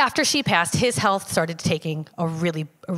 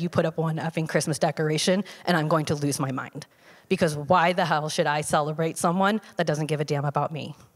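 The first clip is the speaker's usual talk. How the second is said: usual speaking voice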